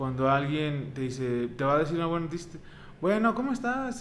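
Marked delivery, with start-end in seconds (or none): 3.0-4.0 bright, very clear tone. Showing how someone sounds when about to give good news: high, clear voice. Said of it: "con una voz bastante aguda, muy clara, el tono alto".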